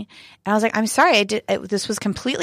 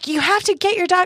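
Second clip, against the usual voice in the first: put-on yelling woman's voice, much higher; 9 semitones higher than usual. Telling a story about a woman whose dog is unleashed: imitating someone yelling. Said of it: "she's like yelling".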